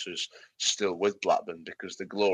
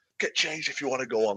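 put-on scolding voice; 6 semitones higher than usual. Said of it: "right in his face".

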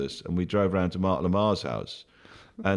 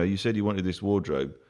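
ordinary delivery

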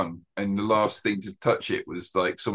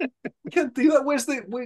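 higher-pitched screaming. Retelling a reaction to a scene with a laptop tracker: imitating own past screaming. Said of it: "I was just screaming".

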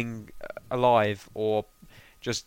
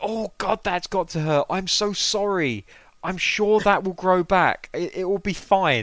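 breezy, light, tossed-off tone, pitched up; 8 semitones higher than usual. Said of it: "His delivery is just spot on".

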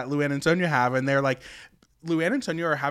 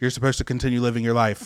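put-on quick, flat, unenthused deadpan monotone; 3 semitones lower than usual. Retelling a scene where a friend answers a phone call, imitating Stephanie's unenthused monotone. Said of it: "unenthused and kind of monotone".

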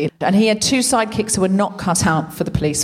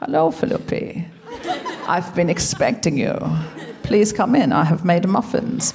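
put-on German villain accent; 2 semitones lower than usual. Retelling how someone voiced the German nemesis: Hair Bear villain voice. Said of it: "Tom used to do his voice and be like".

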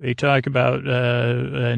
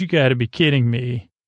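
normal talking voice

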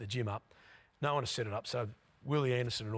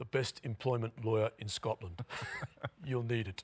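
ordinary talk, nothing marked

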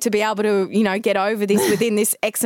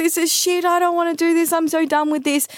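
put-on high, tearful, choked crying voice; 8 semitones higher than usual. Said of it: "and I'm crying".

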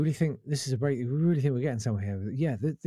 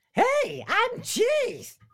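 very high, zany cartoon voice; 3 dB louder than usual. Recalling a recording-booth request, delivering the line in Roger Rabbit voice. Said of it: "Can you do a hey, I'm cheese in the voice of Roger Rabbit? And I went".

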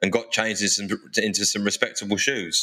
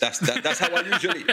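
high-pitched mock UK garage MC voice. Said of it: "I speak like that garage voice".

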